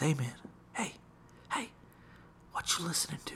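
whispered. Retelling a guy whispering to a man wearing headphones: retelling a whisper. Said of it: "one guy whispered to him".

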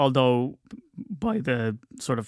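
voice cracking and breaking. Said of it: "oh, my voice broke there".

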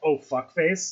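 ordinary delivery

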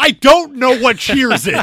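sharp, very high, very loud, shrill snap. Describing a TV conversation where she cuts him off, imitating her snapping. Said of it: "And she just snaps".

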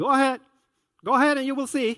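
dry, sarcastic delivery. Recalling what Dad said when you announced you were going out, mock-sarcastic parent.

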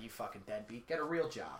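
scornful, disgusted, contemptuous sneering tone. Retelling what people say to restaurant workers: imitating people sneering. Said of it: "people are like".

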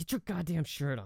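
acted under-breath mutter. Speaker retells what she said to him, under her breath. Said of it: "she says it like under her breath".

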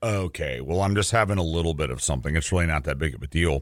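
low, quick, dismissive scoffing brush-off.

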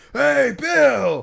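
very high, loud, shrill, rough, annoying scary holler. Imitating a guy who yells players' names at them: retelling a loud, scary yell. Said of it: "yell their name like in a loud, like, you know, annoying if not like scary voice".

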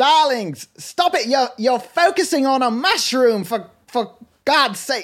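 imitated Australian accent. Retelling what a husband said in a story, australian accent. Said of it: "That was Australian".

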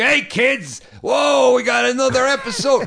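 very high, loud, put-on exaggerated Italian accent. Retelling how Lou Albano played Mario on the show: imitating Lou Albano as Mario. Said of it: "He'd be like".

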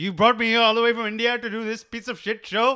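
mock, shrill, very high, very loud furious rant. Retelling a prank clip sent by a friend, Shah Rukh Khan mock-angry outburst. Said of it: "he gets so angry".

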